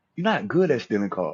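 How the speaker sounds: calm, gentle, affectionate, reproachful tone. Quoting how an auntie used to say it, imitating auntie's loving tone. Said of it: "she'd say it like this ... It's how she spoke with love".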